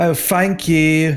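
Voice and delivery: English accent, th as f. Explaining how accents in england turn th into f, in an english accent, th as f. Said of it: "when you leave a lot of stores in England".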